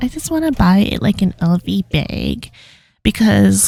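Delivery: ditzy put-on valley girl voice. Imagining what a sugar mom would say, in a Valley Girl voice. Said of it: "I just put on Valley Girl voice".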